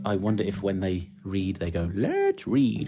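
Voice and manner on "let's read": piggy voice, much higher pitch. Reading a children's story aloud, imagining how the grandparents read: piggy voice. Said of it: "like a piggy".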